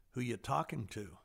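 imitated whisper. Retelling how God answered at a stoplight: imitating a whisper. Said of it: "he whispers".

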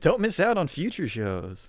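high radio DJ announcer voice. Speaker plugs future shows as a co-host mocks it: monday morning radio voice. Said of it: "I hate your Monday morning radio voice".

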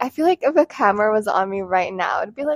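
ordinary talk

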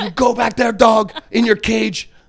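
mock yelling. Retelling how a chef yelled insults: imitating someone yelling. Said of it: "would yell at me".

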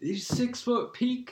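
very high, slow, gushing starstruck fanboy voice. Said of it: "fanboying over Lance".

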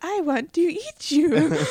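homunculus monster voice, pitched high. Setting up a scenario where the homunculus appears, doing a Gluttony impression. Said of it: "that was a good impression".

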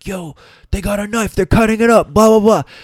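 shouting, very high-pitched. Speaker retells people yelling at them while fighting over a shirt, imitating people yelling. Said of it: "people are like yelling at me like".

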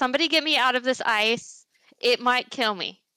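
desperate, urgent voice. Playing a character trapped in ice, yelling for help. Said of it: "I'm gonna yell out".

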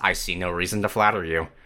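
mock-deadpan character voice. Speaker quoting a character's reply, deadpan Soren impression. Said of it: "He just deadpan says".

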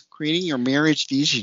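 a slight touch of Minnesota accent. Podcast host repeating the next topic, slight Minnesotan accent. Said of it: "I don't know why I'm doing this little Minnesotan accent a little bit".

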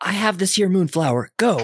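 shrill, very high shouting. Voicing a character who hears this in her headset: yelling. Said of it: "just yells".

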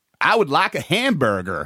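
put-on American accent. Showing others how to say a phrase, the speaker says it in an American accent. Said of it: "I say it American as".

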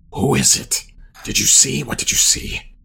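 hushed whisper, barely voiced. Motioning his minion over, the character questions him, whispering. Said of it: "I'll kind of whisper to him".

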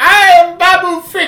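tiny squeaky voice, very high and loud. Praising a favorite movie character, imitating Babu Frick. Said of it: "He's just got this little voice".

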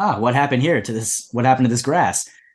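ordinary talk

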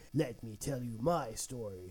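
very low, hushed, dubbed foreign-film delivery. Retelling a foreign film scene, the speaker voices a character; dubbed foreign-film voice. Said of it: "I'm basically talking like a dub".

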